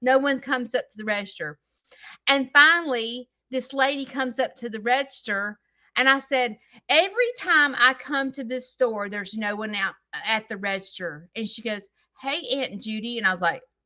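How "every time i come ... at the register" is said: usual speaking voice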